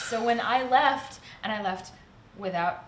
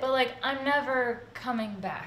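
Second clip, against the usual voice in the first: normal talking voice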